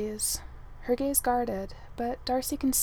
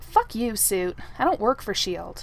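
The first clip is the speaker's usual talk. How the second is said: loud, hostile snapping; 5 dB louder than usual. Narrating a story, a woman recognizes a man's voice and snaps back. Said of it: "she snaps".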